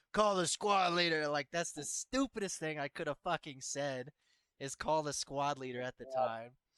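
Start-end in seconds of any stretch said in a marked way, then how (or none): 0.1-1.2 put-on drunk, desperate, high-pitched shout. Recalling sitting in a cold shower being sobered up, retelling a scream. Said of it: "screaming like".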